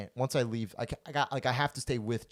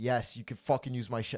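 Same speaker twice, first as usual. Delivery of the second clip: put-on angry tone. Retelling a friend's answer about using her shower: imitating someone angry. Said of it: "she's pissed".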